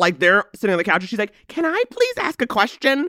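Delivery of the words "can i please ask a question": put-on very high, very formal, proper, polite child voice. Retelling how a young stepdaughter asked a question, imitating a formal child. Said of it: "she comes over very formal".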